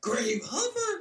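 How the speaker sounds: very high, squeaky, silly put-on voice. Repeating a name the way it was said on the podcast: imitating own high-pitched voice. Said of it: "With your high-pitched voice?".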